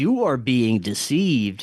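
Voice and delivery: put-on loud, commanding voice. Retelling what a voice said while he prayed, loud commanding voice. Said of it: "loud, commanding voice says".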